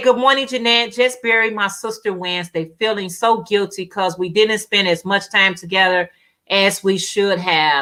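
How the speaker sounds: usual speaking voice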